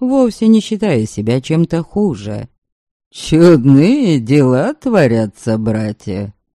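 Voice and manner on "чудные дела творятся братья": derisive, mocking tone with a faintly wary, guarded undertone. Reading a story, a character addresses another man, mocking. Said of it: "Насмешливо сказал ему Свенерд".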